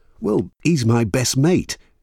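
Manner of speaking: defensive tone. A man replies to a woman who speaks up for her best friend, defensive. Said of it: "John said defensively".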